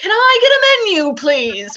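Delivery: loud, very high, drawn-out, grand regal voice. Retelling how a customer walked in and asked for a menu: imitating a kingly manner. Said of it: "he walks in like he's a fucking king".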